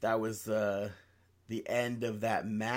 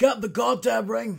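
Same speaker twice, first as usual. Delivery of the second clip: very high-pitched, pleading, begging tone; 10 semitones higher, 4 dB louder than usual. Repeating the retold wrestling line, imitating McIntyre. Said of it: "that's McIntyre".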